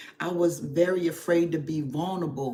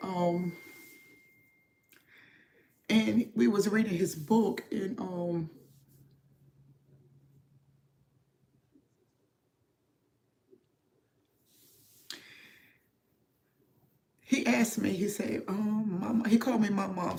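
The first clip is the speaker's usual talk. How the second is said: moved, emotional, slow and hesitant speech; 4 semitones higher than usual. A grandparent recalls reading a book with their grandson, getting emotional. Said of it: "sorry, I'm getting emotional".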